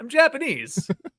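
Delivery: very high-pitched character voice. Retelling a parody video bit: Joey the Anime Man impression. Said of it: "It's a good Joey the Anime Man impression".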